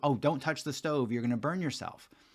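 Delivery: ordinary delivery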